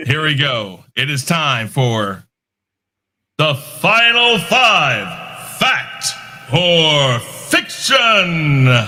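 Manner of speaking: pumped-up radio DJ announcer voice, swooping high. Host addressing the guys, in a trumped-up DJ voice. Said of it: "my trumped up, you know, D J voice".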